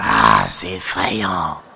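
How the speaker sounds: very low, hoarse, gruff, raspy dad growl. Retelling what dad said while watching tv, in a big raspy dad voice. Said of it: "Avec sa grosse voix rauque".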